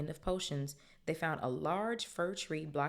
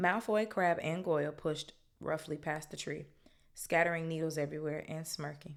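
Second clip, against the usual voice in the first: ordinary delivery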